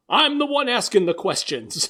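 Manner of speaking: loud drill-sergeant bark. Retelling a story where a captain is being questioned, like a drill sergeant. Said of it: "like a drill sergeant".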